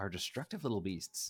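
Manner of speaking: beasts stressed, spoken in a soft voice. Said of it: "Emphasis on beasts".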